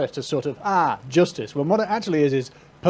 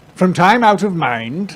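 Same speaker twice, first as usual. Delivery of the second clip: put-on loud, old-fashioned, old-timey man's reading voice; 3 semitones higher, 5 dB louder than usual. Reading a 1782 text aloud, the speaker uses his old-timey guy voice. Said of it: "my general old-timey guy voice".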